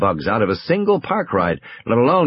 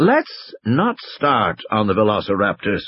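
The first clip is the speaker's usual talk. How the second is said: plain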